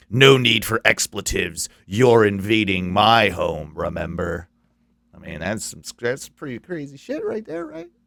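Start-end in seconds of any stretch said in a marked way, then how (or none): 0.2-4.5 low, eerie, haunting demonic voice. Telling the story of the haunting, speaker voices the reply in a haunting demonic voice. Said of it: "the haunting demonic voice".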